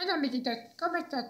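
bad imitation, high, soft, mousy voice. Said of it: "la de".

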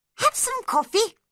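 very high, kindly, friendly tone. The March Hare speaks to Alice as she sits down: friendly voice. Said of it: "the March Hare said in a friendly voice".

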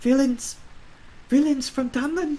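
whispered, hushed. A narrator reads a woman's line after she looks around quickly, in a hushed whisper. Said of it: "she says in a hushed whisper".

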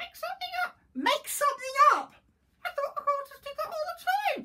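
very high, shrill, loud, cheeky naughty parrot voice. A parrot talking back to a reporter, naughty parrot voice. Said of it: "pet-sit a naughty parrot".

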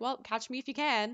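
ordinary talk

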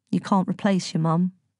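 plain

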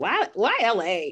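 snippy put-on attitude. Imagining how someone asked about Los Angeles: imitating someone asking with attitude. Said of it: "they say it with an attitude, like".

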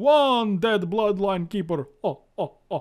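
loud, booming, very slow, high puppet voice. Counting a destroyed card: Count from Sesame Street voice. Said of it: "that's the Count from Sesame Street".

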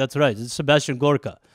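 fake Russian-sounding accent. Answering a listener request, doing a Sebastian Gorka impression, Russian-sounding. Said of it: "He's like".

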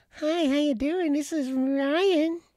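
squeaky, very high, very slow mocking voice. Teasing another speaker about his voice for radio: imitating Ryan's voice. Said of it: "You can't have a voice like yours".

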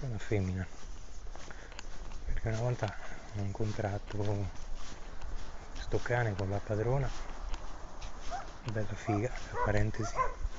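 quiet, hushed speech.

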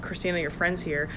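normal talking voice

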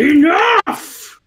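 most threatening voice, high, loud commanding roar.

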